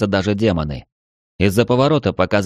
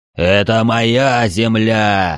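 monster's cry, called out but kept contained; 2 semitones higher than usual. Reading a story, the monster yells after fleeing archdemons: booming shout. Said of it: "громогласно прокричал монстр".

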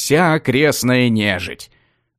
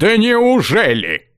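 sarcastic, snide, mocking, pitched-up delivery; 9 semitones higher than usual. Reading a story, the mage answers another character with a sarcastic jab. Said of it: "съязвил маг".

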